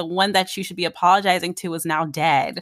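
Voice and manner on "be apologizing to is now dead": ordinary talk, nothing marked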